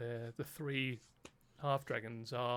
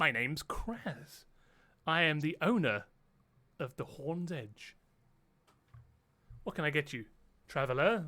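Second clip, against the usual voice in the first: loud, raised kobold creature voice; 3 semitones higher, 5 dB louder than usual. Narrating, the speaker voices the bar owner greeting a traveller: Kraz, female kobold voice. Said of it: "a female kobold comes over to you and goes".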